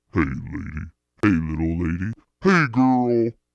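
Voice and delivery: put-on man's voice. Asked how to sound like a man, the speaker puts on a man's voice. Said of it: "This is me as a man".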